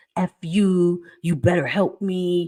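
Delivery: mean, nasty, aggressive demanding tone. Acting out how a grown woman switches from a baby crying voice, imitating her nasty voice. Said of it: "to this nasty".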